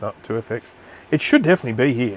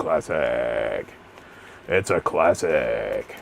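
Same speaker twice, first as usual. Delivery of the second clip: very deep, drawn-out, creaky announcer voice; 11 semitones lower, 3 dB quieter than usual. A streamer talking to viewers slips briefly into a radio voice. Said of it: "Just went into my radio voice there for a second".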